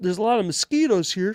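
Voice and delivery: bad, silly, stupid frog puppet voice. Trying out how a man will sound when he shows up, in a bad Kermit the Frog voice. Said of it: "that stupid Kermit the Frog voice".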